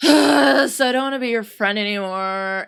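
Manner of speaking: huffing and puffing, loud heavy huffy sighs. Speaker demonstrates saying a line with attitude, huffing and puffing. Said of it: "what I call huffing and puffing, like a lot of sighing".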